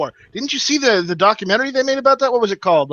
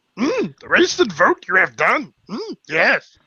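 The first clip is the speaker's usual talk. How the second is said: spot-on, tiny, wise puppet voice. Joking about third-party votes in a Yoda voice. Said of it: "that is way too good of a fucking Yoda impression".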